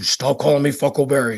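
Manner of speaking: deep voice sunk into lowest bass.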